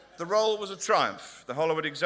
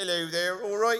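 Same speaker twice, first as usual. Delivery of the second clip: speaking in West Country accent; 4 semitones higher than usual. Speaker shows off the West Country accent as an example, in a West Country accent. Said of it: "It's one of those great accents".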